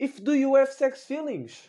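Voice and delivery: put-on very high, thin little squeak. Retelling the question a man asked the speaker, in a thin high put-on voice. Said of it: "meio com esta voz fininha".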